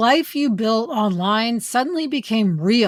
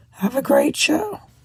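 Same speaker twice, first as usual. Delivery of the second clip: badly hoarse, nearly lost voice, pitched higher; 4 semitones higher than usual. Leaving a voice memo while sick, sick, nearly lost voice. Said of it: "my voice is absolutely as bad".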